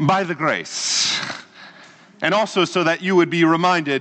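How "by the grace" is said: put-on Indian accent. Quoting a woman's usual reply about her day, imitating an indian accent. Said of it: "in her wonderful Indian accent".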